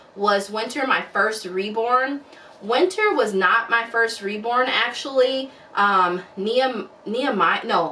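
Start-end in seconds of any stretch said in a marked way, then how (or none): none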